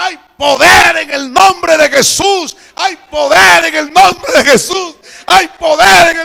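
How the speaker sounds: full-lung shouting, loud and high-pitched. Retelling the brother praying loudly over the baby: imitating shouting at full voice. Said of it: "empezó a gritar a todo pulmón".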